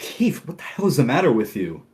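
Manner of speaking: flustered, annoyed tone. Describing a scene, acting out one man's line to Keith, retelling a perturbed outburst. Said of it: "He looks a little perturbed at first".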